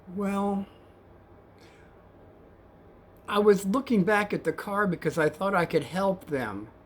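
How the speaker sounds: acted, unruffled, matter-of-fact, very calm, even delivery. Quoting a man's answer to the speaker's question, retelling a very calm reply. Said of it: "Very calmly".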